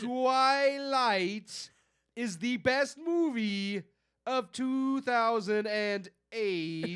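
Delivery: put-on dim-witted voice. Told to read a line aloud like an idiot. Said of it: "Read it like an idiot".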